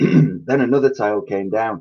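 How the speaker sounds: plain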